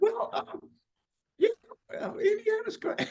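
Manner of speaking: very high, startled, squeaky voice.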